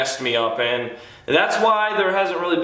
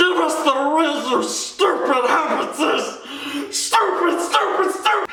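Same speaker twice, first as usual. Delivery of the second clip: very high, slow angry shriek. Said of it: "I can do Smeagol pretty well".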